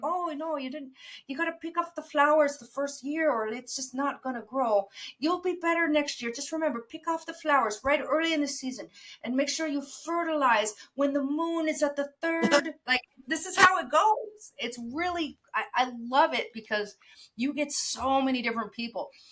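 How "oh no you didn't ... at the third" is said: put-on Irish farmer accent. Quoting the speaker's irish blueberry farmer, in an irish accent. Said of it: "I gave this an Irish accent because I have an Irish blueberry farmer".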